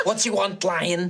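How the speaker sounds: put-on Scouse accent. Giving a game character a funny voice, a Scouse accent.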